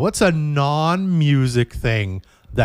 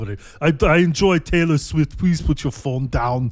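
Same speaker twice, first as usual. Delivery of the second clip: put-on Austrian accent; 4 semitones higher than usual. Retelling how a man at a concert told the speaker to put the phone down: Arnold Schwarzenegger impression. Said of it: "I'm doing an Austrian accent".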